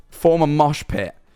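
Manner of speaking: ordinary talk, nothing marked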